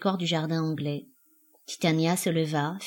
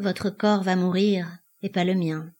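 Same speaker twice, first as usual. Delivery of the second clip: plain reading voice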